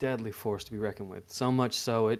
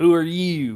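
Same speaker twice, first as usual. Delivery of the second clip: put-on high, very loud, botched country accent; 6 semitones higher, 11 dB louder than usual. Retelling a man he feared asking who he was, broken country accent attempt. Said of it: "broken country attempt voice".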